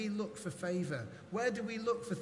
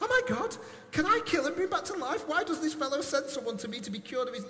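high, loud, frantic, alarmed panicked cry; 7 semitones higher, 6 dB louder than usual. Reading a quoted passage aloud: panicked voice. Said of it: "I want to read it in a voice of panic".

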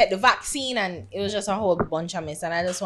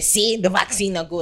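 normal talking voice

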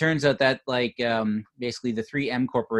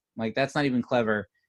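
normal talking voice

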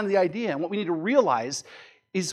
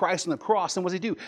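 usual speaking voice

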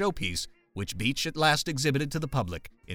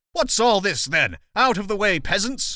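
loud, raised-pitch shouting; 7 semitones higher, 7 dB louder than usual. Narrating a man shoving through a crowd to see the commotion, shouting. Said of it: "shoving through the crowd shouting".

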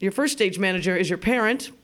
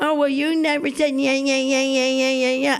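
put-on high, taunting parody voice; 5 semitones higher than usual. Retelling how mother mimicked the speaker: imitating mother's mocking impersonation. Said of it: "she would do an impersonation of me".

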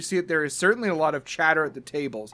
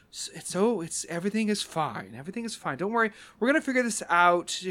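soothing, calming reassurance, lifted pitch; 5 semitones higher than usual. Voicing a character who calms upset coworkers: calming, soothing tone. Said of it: "kinda calming them down and says".

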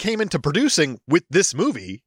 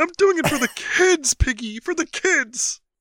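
high-pitched puppet voice; 10 semitones higher than usual. Doing a bit with another speaker addressed as Piggy, in a Kermit the Frog voice. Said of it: "You're way more Kermit than Raymond".

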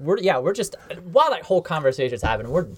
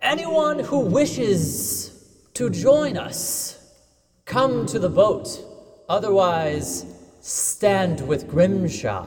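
grand, proclaiming voice; 4 semitones higher than usual. Player character casting a spell to call out to everyone, in a magically booming voice. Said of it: "One of its effects is to make a booming voice".

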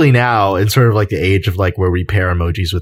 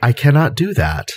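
flat deadpan robotic voice, higher; 7 semitones higher than usual. Imagining how a film robot would turn secretly malicious: deadpan robot voice. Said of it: "operate in this sort of, uh, malicious secrecy".

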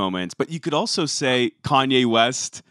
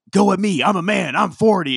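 mock unhinged, high-pitched screaming; 7 semitones higher, 3 dB louder than usual. Retelling a football coach screaming at a reporter in a press conference, imitating a coach screaming. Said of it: "he screams like".

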